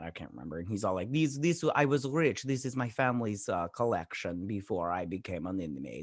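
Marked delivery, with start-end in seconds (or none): none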